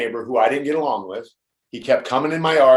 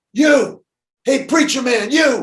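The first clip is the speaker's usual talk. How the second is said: very high, long stretched-out screaming shout; 12 semitones higher, 3 dB louder than usual. Telling a story about a guy singling him out from the top: retelling a guy screaming. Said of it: "this guy starts screaming from the top".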